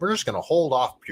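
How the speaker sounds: ordinary delivery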